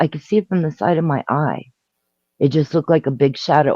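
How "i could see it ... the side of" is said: plain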